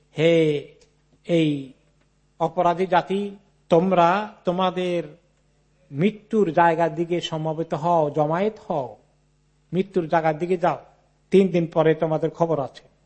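ordinary delivery

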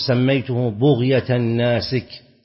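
ordinary talk, nothing marked

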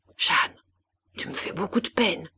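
gentle, soft, saddened, sorrowful murmur. A mother speaks to her misbehaving child in front of company, murmured softly. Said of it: "elle se contenta de murmurer doucement".

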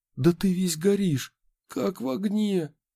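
alarmed, panicked outburst at very high pitch. Narrator reading a man kneeling beside the feverish narrator, panicky. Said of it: "панические нотки в его голосе".

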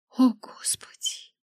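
trembling, quavering, stammering voice. Reading a novel aloud, the narrator's own line after being released, trembling voice. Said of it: "дрожащим голосом пролепетала я".

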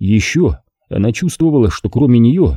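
ordinary delivery

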